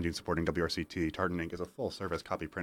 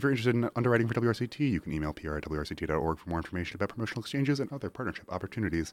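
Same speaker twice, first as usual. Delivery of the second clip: very fast, rattled-off rush through every word; 3 semitones higher than usual. Radio host reading the station's underwriting announcement, very fast. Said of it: "I was trying to say that as fast as I could".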